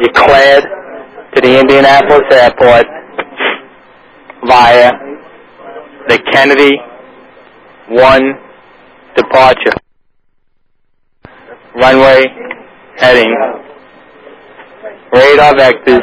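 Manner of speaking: slow, word-by-word delivery.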